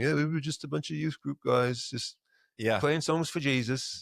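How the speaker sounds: put-on British accent. Imitating a worship band looking back on their start: put-on British accent. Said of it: "sorry, that was a British accent".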